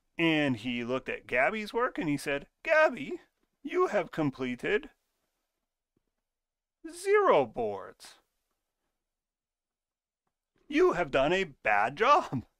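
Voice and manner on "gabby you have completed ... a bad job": odd, silly, loud put-on voice, swooping pitch. Quoting what he said about another person's work, in a weird voice. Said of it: "I made that weird voice".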